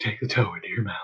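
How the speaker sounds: soft, airy, breath-laden creepy voice. Closing a podcast episode, a co-host puts on a breathy voice. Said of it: "I'm going to talk all in this breathy voice".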